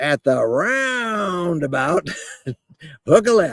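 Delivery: put-on slow, unhurried, high-pitched Cajun accent. Someone recalls a navigation voice that amused them on drives, using a cajun accent. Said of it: "introduced us to a Cajun voice".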